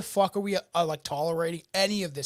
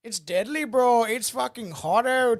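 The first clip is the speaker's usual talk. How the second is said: Albertan accent, pitched up; 5 semitones higher, 4 dB louder than usual. Showing how people sound in Alberta: Albertan native accent. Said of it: "Stock less of like Albertan native".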